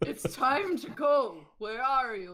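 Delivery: high, loud, slow, drawn-out calling character voice. Calling out to the hidden character in Carlisle voice. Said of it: "do your best Carlisle voice".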